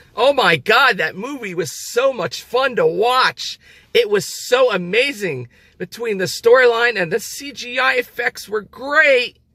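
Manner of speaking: mock-gushing, sarcastic fake enthusiasm, high-pitched. Praising a movie before admitting it was garbage: sarcastic fake enthusiasm. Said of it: "I'm being very sarcastic".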